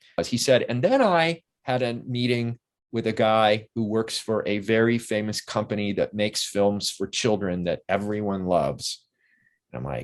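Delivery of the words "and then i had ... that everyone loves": ordinary delivery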